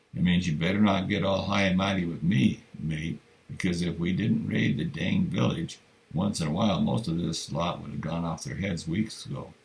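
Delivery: ordinary delivery, nothing marked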